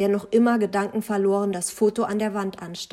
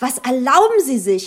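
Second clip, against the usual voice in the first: loud, outraged, indignant cry; 4 semitones higher, 8 dB louder than usual. A mother cries out at the narrator's remarks about her son, indignant cry. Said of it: "rief seine Mutter empört".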